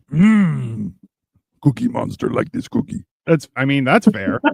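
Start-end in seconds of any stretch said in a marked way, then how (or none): 0.1-3.0 raspy voice with the hmm stretched out long. Chatting about doing character voices, the speaker breaks into a Cookie Monster voice. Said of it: "Cookie Monster all the way".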